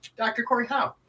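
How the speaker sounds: eager and excited. Introducing oneself at the start of a show: said excitedly.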